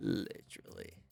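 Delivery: whispered, breathy, airy voice breathed out softly. Showing a friend how he says the word; VR-chat e-boy impression. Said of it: "You have to say it like him".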